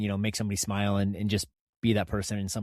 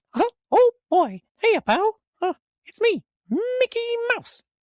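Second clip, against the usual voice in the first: very high-pitched, belted delivery; 8 dB louder than usual. Speaker tries an impersonation for the other person, in a Mickey Mouse impression. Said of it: "my Mickey impersonation".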